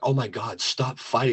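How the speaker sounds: frantic, panicky, freaked-out voice. Retelling how a wife reacted to a son's fights: imitating someone freaking out. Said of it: "my wife's freaking out".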